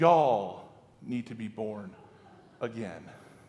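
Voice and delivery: very low, deep, drawn-out southern drawl. The speaker voices Jesus's words to everyone, giving him a Southern drawl. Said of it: "let's give him a southern drawl".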